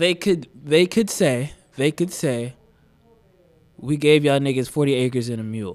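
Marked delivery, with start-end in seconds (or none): none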